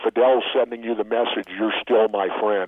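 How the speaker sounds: plain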